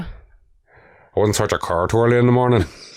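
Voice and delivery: Northern Irish accent impression. Prompted by a co-host to do the impression, in a northern irish accent. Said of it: "you have a good Northern Ireland impression".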